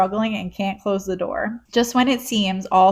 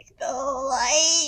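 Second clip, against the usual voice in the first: high croak, word "light" drawn out; 6 semitones higher, 3 dB quieter than usual. Recapping the villain disappearing, imitating Ansem's funny voice. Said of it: "He's like".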